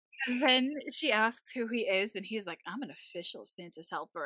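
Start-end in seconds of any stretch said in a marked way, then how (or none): 2.7-4.3 puffed-up, smug, self-satisfied bragging tone. Retelling what a cartoon character says to a girl: imitating a smug boast.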